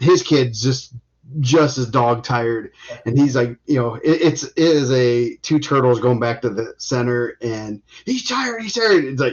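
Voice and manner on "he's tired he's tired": very high, loud yell. Retelling what coaches yell when a wrestler tires: imitating a coach yelling. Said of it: "the coaches are yelling that".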